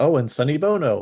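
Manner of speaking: TV special promo announcer voice. Listing actors recognized while watching, like a tv special promo. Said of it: "I like how you're doing like a a promo for a T V special".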